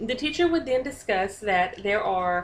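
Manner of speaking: ordinary delivery, nothing marked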